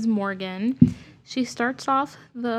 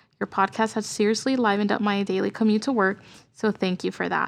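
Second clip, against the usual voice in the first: normal talking voice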